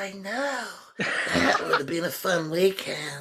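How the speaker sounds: put-on high, slow stoner voice. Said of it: "His voice in it, man, is great".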